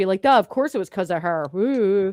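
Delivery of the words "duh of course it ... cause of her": usual speaking voice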